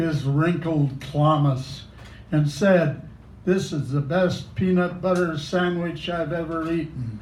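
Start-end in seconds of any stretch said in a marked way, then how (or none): none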